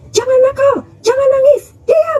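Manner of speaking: high-pitched, snapping mock scolding. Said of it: "dibentak gitu kan".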